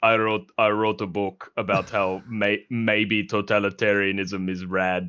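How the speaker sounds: put-on deep German accent. Imitating Henry Kissinger answering about military experience: Henry Kissinger impression. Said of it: "he had a German accent".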